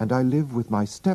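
ordinary delivery

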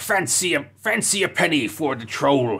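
put-on pirate-style voice in a beggar's patter. Imitating how the book's trolls talk: imitating pirate-like troll voice. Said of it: "they all sound like pirates".

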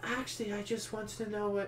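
barely audible, very quiet, hushed voice. In a group-project scene, [name] speaks up hesitantly, too quietly. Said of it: "could you please speak up?".

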